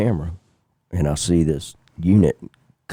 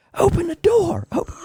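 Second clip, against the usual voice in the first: mock scream pitched very high. Retelling a man locking the door and screaming at the speaker, retelling a scream. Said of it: "he's screaming at me".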